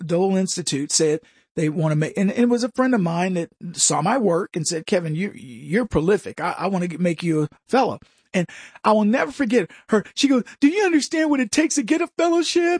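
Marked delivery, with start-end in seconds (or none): 10.6-12.8 mock near-tearful voice, on edge of crying, pitched up. Speaker quotes a friend who wanted to make him a fellow, imitating someone almost crying. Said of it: "she was almost crying".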